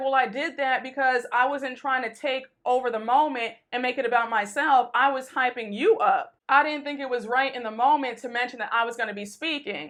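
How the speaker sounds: plain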